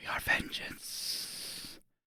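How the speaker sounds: very hushed, barely voiced screamed whisper. Narrating a game, voicing a sword that takes over, in a screamed whisper. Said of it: "in a voice that is more a, a screamed whisper".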